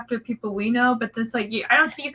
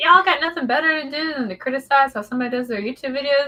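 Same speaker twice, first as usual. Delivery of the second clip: ordinary talk, nothing marked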